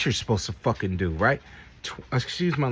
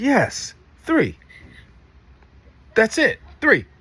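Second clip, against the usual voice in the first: slow, spelled-out yelling, loud, high and drawn out; 8 semitones higher, 6 dB louder than usual. Helping someone count feet in a math problem; yelling. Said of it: "You're yelling at me".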